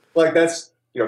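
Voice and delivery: high, put-on standard American accent.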